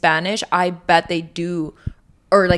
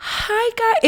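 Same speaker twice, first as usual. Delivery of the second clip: put-on very high angelic voice. Teasing a friend about how she sounds in her videos: imitating Bells' angelic TikTok voice. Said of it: "You're like".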